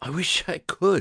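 put-on very high, slow, drawn-out wheezing. Narrator reads a man's reply after being warned he'll break his neck: wheezing. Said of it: "he wheezed".

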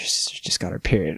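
put-on dead-serious, grave whisper. Retelling what mom said on coming home: imitating a serious mom. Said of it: "all serious".

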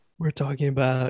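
ordinary talk

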